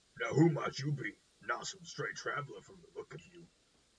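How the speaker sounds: put-on rough-spoken outlaw bandit character voice. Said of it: "I'm still gonna keep that voice going".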